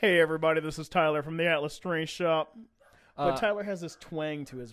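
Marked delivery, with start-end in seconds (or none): 0.0-2.6 louder put-on booming dad voice. Asked to do it again, imitating Tyler's booming dad voice. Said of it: "Do that again".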